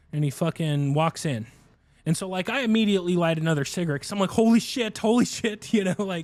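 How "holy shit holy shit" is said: slow, high, freaking-out tone. Retelling lighting a cigarette after the other person went inside: imitating freaking out. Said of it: "so now I can freak out a little bit".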